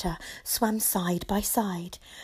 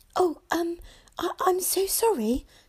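stammering, much higher pitched; 9 semitones higher than usual. She answers a shark who has just greeted her, stammering. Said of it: "she stammered".

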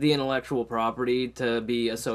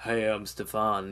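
suave delivery laid on with charm; 3 semitones lower, 4 dB quieter than usual. Imitating a TV character being suave: suave Stefan voice. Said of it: "suave, and he's all, like".

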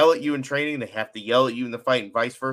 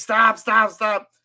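play-acted, very high, loud screaming; 10 semitones higher, 5 dB louder than usual. Retelling how a man stopped a speeding car during an interview, retelling a scream. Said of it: "he starts like screaming like".

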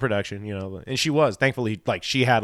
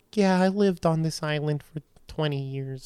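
mock drunk older woman's voice, higher and quieter; 3 semitones higher, 5 dB quieter than usual. Retelling what a local woman said on Catalina Island, imitating a drunk older lady.

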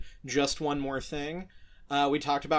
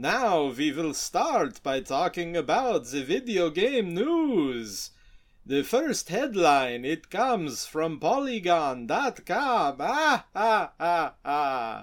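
put-on spooky vampire voice; 2 semitones higher, 4 dB louder than usual. Podcast host opening the video game news segment, [name] vampire voice. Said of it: "I am [name], the Vampire".

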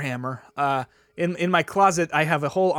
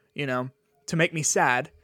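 plain

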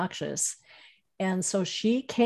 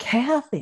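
put-on stunned, startled, high, shocked outcry; 5 semitones higher than usual. Retelling the mother seeing kathy walk: imitating mother's shocked call. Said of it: "just like that".

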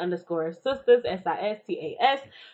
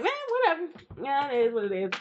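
breezy, careless, nonchalant tone, pitched up; 6 semitones higher than usual. Imitating a friend brushing off a problem: mock nonchalant tone. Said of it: "she be the other one all nonchalant with it".

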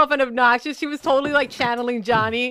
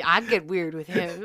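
low muttering under the breath; 6 semitones lower, 6 dB quieter than usual. Retelling what she said quietly in a segment: imitating Indy Hartwell muttering under her breath. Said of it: "Just talking under her breath".

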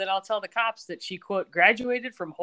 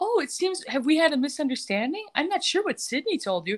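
beaming, sugary all-smiles tone, pitched up; 7 semitones higher than usual. Retelling a scene, the speaker quotes Michael: imitating smiley Michael. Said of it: "He's being all smiley Michael".

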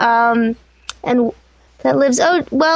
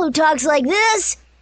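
daring, fearless cartoon girl voice; 2 semitones higher than usual. Voice actor demonstrates their Mr. Men show roles, in Little Miss Daredevil voice. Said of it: "And Little Miss Daredevil".

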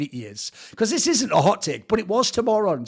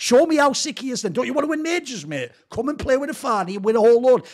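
high, dripping sarcastic tone; 7 semitones higher, 3 dB louder than usual. Taunting a player about playing with the guy: sarcastic taunt. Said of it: "that is sarcasm".

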